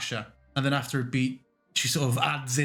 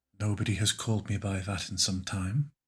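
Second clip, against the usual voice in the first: voice brought down a little, slightly deeper; 5 semitones lower, 4 dB quieter than usual. In a role-played scene, answering another character: lowered voice. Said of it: "lowers her voice a little bit".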